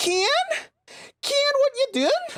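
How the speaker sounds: put-on very high, piping voice with Northern Irish accent. Imitating a girl from college, in a high northern irish accent. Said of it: "she was like a high pitched Northern Irish accent".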